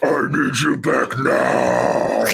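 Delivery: very slow, creaky voice with swooping pitch. Voicing the devil calling someone home, sounding like Shockmaster. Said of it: "I sounded a little Shockmasters when I said that".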